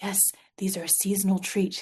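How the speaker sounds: very soft, gentle, calming, soothing murmur. Quoting the SNL Sweaty Balls skit in a soft, soothing SNL skit voice. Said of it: "their very soft and soothing voice".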